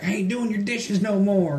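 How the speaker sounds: acted, high, loud, upset, fed-up tone. Recounting a film scene, the speaker quotes Lea Thompson's reply, mock-upset. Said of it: "she gets all upset".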